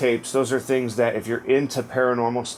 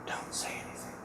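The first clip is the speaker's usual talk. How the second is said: very quiet, breathy, barely audible whisper. Describing what they heard, the speaker retells a woman's whisper. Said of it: "it's like a whisper".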